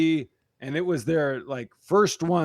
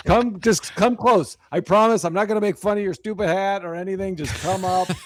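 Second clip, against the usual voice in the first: put-on pleading voice, pitched higher; 5 semitones higher than usual. Retelling how a performer begged the crowd to come forward: imitating Charlie begging. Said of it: "he just begging people to come up front".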